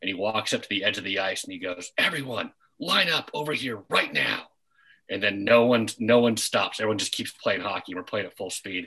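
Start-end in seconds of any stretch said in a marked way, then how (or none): 2.0-4.4 mock stern, commanding threatening yell, high and raised. Retelling a man at the ice edge calling players over, retelling a threatening yell. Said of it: "every time he yelled, his voice got a little less threatening".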